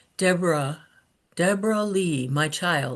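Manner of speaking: soft, quiet, hushed voice. Retelling a voice heard calling to Deborah, imitating a soft quiet voice. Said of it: "It it was just soft and quiet".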